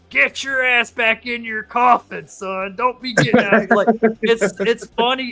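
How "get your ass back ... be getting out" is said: put-on drill sergeant voice. Retelling a movie scene with a ghost drill sergeant: R. Lee Ermey drill sergeant voice. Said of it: "he's playing a drill sergeant. He's like".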